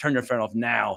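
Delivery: acted, meanest possible stern voice. Retelling confronting a man on his phone during a movie, retelling his meanest voice. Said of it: "in my meanest voice I could muster".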